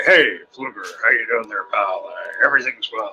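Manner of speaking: put-on deep bass voice, dropped extra low. Greeting Fluger, whom he calls brother, with more bass in the voice. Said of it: "put a little more bass in my voice".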